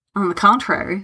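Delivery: ordinary delivery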